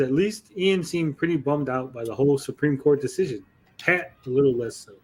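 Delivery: ordinary delivery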